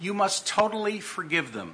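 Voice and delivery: put-on speaking with a Romanian accent. Retelling a friend's advice to forgive: romanian accent. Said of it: "spoken in his Romanian accent".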